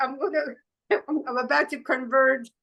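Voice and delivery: ordinary talk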